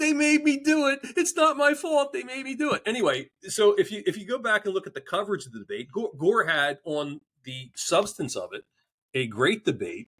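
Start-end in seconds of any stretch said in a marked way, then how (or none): 0.0-2.8 very high, sobbing, wailing scream. Retelling a debate story, voicing the makeup person: imitating a crying scream. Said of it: "she's sitting there crying, and she's screaming".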